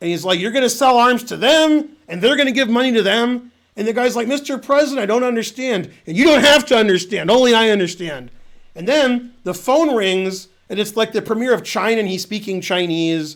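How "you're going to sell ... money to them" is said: play-acted, bossy, shouted delivery. Retelling how the president bosses everyone once guests leave; retelling yelled orders. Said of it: "he's like yelling at everybody what to do".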